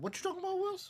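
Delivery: squeaky, very high voice, pitch pushed way up. Doing a Gary Coleman impression of a catchphrase: Gary Coleman impression. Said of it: "my best, uh, Gary Coleman".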